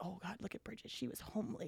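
breathy, very quiet whispered delivery. Retelling your mom whispering to your dad about you: retelling a whisper. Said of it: "She's like whispering to my dad".

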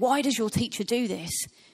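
put-on accusing voice. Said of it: "we can read it with a certain tone of voice".

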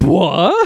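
high, loud, shocked what. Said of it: "both Josuke and Okuyasu just go like".

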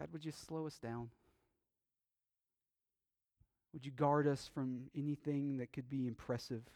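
calm, quiet, reverent, prayer-like delivery. Pastor recounting how he sometimes prays to God, retelling a calm prayer. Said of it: "There are times when I just calmly".

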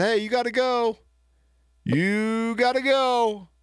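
high, slow, polite yet firm voice. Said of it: "But I said it politely".

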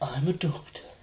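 soft asmr talking. Answering a request to do some ASMR: ASMR voice. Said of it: "do some A S M R, [name]".

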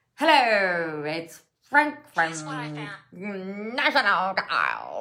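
obvious, distinctive sing-song tv ad spokesman voice. Explaining the voice to Australian viewers, the speaker does a Frank from National Tiles impression. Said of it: "he's got a very, very obvious and specific voice".

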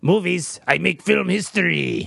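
put-on French accent. Retelling how a character bluffs his way in: imitating a French accent. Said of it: "He does a French accent".

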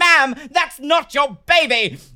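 very loud, shrill, high-pitched scream. Speaker retells screaming at a shoplifter caught by security, retelling a scream. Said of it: "I screamed".

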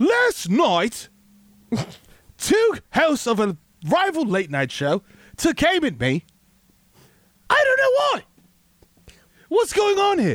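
very high reaction with pitch swooping and swinging. Imagining for the other hosts how he would react to being mocked, do a John Oliver impression. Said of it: "Imagine John Oliver though reacting".

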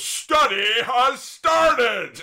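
put-on strong Northern Irish accent. Imitating the rugby trainer when he got upset, severe Northern Irish accent. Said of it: "a very severe Northern Irish accent".

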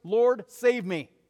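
very loud, high-pitched, urgent panicked cry. Retelling a man in danger crying out for help, acting out a panicked cry. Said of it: "Don't you imagine he was somewhat panicked? You can hear it in his voice".

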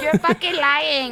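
fake distressed voice.

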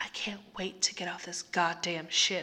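muttered, mumbling quietly to oneself. A narrator reads a woman's line as she slips into her astronaut suit, muttering to herself. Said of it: "she muttered to herself".

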